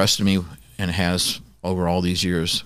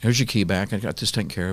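ordinary talk, nothing marked

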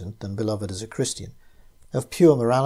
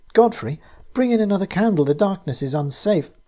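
alarmed, raised, hurried voice; 9 semitones higher, 5 dB louder than usual. A girl in bed cries out as the candle blows out, in hurried alarm. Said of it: "with hurried alarm, exclaimed".

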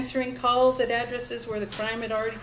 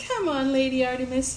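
coaxing, cooing voice as if to a pet; 2 semitones higher than usual. Narrator reads Marcy, down on the rug, calling a small animal, cooed. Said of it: "she cooed".

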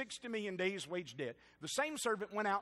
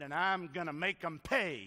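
mock-angry, lower, through gritted teeth; 3 semitones lower than usual. Speaker retells what a woman said to him, imitating her angry gritted-teeth voice. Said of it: "she gritted her teeth, and as angrily as she could".

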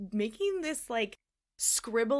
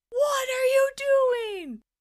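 acted, very high, stretched-out shriek; 14 semitones higher, 5 dB louder than usual. Retelling their reaction as he scribbles instead of writing, retelling a scream. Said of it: "And I'm screaming".

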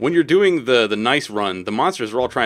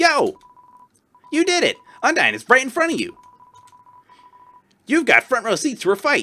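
put-on very high, small monster-like young kid voice; 13 semitones higher than usual. Voicing a game character's dialogue aloud during a playthrough, Monster Kid voice. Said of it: "I've changed his voice like 5 times".

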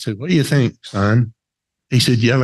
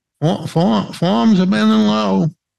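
put-on slurred speech, very high and very slow; 9 semitones higher than usual. Retelling what Zeke said in his room, imitating Zeke's impaired speech. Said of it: "he kind of talked like this".

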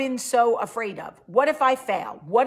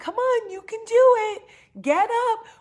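put-on very high, coaxing baby-talk voice; 10 semitones higher than usual. Showing how people cheer on a baby learning to walk, encouraging baby voice. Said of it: "that baby voice to ourselves".

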